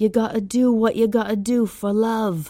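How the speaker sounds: put-on light, charming, sweet British accent. Telling Ira what a man said while looking the speaker in the eye, little British accent. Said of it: "with this adorable little British accent".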